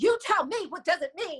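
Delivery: fed-up, furious, angry delivery. Retelling how an old recording line was said: imitating own angry line. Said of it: "the way that I say it was like".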